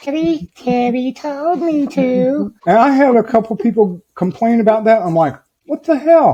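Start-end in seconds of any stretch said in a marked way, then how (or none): 0.0-2.5 strange, very high voice, slowed right down, drawn out. Retelling answering who's back there, in a weird high-pitched voice. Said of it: "I do this really weird high pitched voice".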